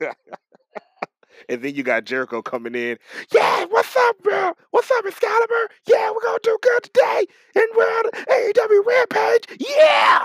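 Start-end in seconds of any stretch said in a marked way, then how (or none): 3.3-10.3 very high-pitched, loud screaming put-on voice. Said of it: "Jericho screaming on the goddamn c-".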